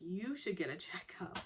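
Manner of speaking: usual speaking voice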